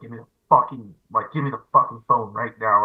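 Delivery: pissed-off, angry, demanding outburst. Retelling what he demanded while pissed: imitating someone angry. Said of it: "he was pissed or he was feeling something".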